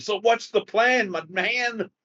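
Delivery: showy, flashy called-out delivery. Leaving the establishment, his character asks the group about the plan in a very loud voice. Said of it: "in a very loud voice".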